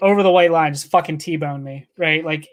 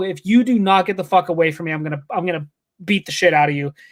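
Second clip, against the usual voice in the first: mock-angry, furious put-on voice. Retelling what he told a stranger who came up to him: retelling an angry threat. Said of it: "I was pissed".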